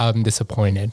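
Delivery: ordinary delivery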